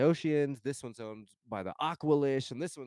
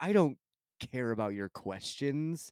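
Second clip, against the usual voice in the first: put-on, mock disgusted tone. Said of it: "answers her in the most disgusted way".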